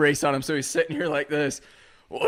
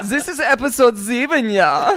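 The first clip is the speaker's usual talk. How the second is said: put-on German accent, high and loud; 6 semitones higher, 6 dB louder than usual.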